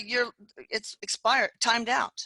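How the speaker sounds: plain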